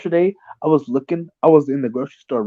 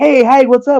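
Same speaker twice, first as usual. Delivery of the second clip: put-on very high, loud, eager enthusiastic tone; 10 semitones higher, 8 dB louder than usual. Imitating an acquaintance greeting eagerly: imitating an enthusiastic greeting. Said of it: "he ever has enthusiasm in his voice".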